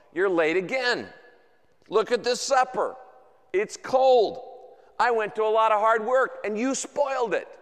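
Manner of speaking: scolding, accusing voice. Acting out a wife greeting her late husband: imitating an accusing wife. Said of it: "his wife says in an accusing tone".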